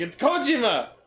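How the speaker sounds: mock irritated outburst. Retelling how he corrected the narrator's pronunciation of his name: imitating an angry correction. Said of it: "visibly angry and go".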